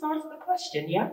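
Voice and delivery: put-on British accent slipping out. Retelling what he said at a Zoom party, in a British accent. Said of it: "my British accent came out then".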